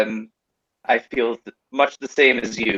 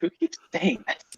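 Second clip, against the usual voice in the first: hushed whisper under the breath; 9 semitones higher, 6 dB quieter than usual. Voicing Lucirosi muttering an aside, Lucirosi whispering under his breath. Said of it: "kind of whispers under his breath".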